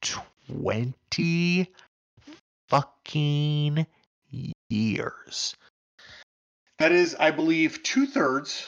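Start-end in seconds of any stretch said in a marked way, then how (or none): 0.0-5.5 up-close microphone voice, lips on the mic. Speaker re-reading a line for emphasis, close-mic voice. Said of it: "in my up close to the microphone voice".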